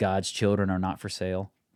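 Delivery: ordinary talk, nothing marked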